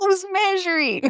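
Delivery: very high, soft, mock-incredulous put-on voice.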